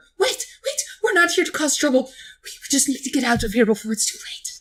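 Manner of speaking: panicked stuttering whisper. Voicing a halfling surrendering to strangers: panicked stuttering whisper. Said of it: "stutters in a panic whisper".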